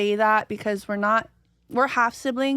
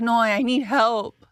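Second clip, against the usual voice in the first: put-on, imitated crying. A speaker retells Kamaka begging for help, imitating Kamaka crying. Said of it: "crying like a little girl".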